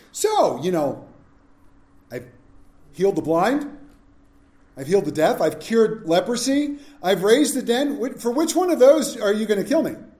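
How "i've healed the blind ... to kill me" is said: put-on heavy sarcasm, pointed delivery. Picturing Jesus asking those who want to kill him: imitating Jesus being sarcastic. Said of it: "just gotta picture him".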